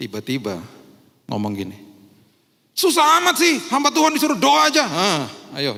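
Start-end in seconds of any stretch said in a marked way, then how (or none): 2.7-4.8 put-on very high, very loud, shrill scolding voice. Retelling how she suddenly scolded him at home: imitating someone scolding. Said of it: "dimarahin loh saya".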